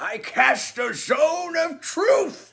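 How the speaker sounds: put-on high, slow, shouted old man voice. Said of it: "in your best old man voice".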